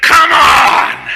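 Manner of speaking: high, loud, challenging bully shout.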